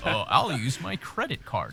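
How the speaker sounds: slow, sing-song plain everyman male voice.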